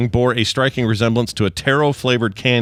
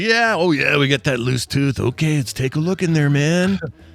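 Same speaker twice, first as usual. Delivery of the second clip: loose, laid-back surfer voice, pitched up; 5 semitones higher than usual. Patient imitating their dentist, laid-back surfer voice like the Dude. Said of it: "he sounds like a surfer".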